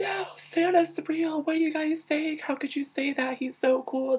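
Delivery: mock very high, tearful yelling at full volume. Retelling defending Santa as a first grader to the others: a crying yell. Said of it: "yelling at the top of my lungs and I'm crying".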